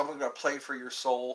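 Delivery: ordinary delivery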